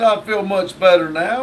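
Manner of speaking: normal talking voice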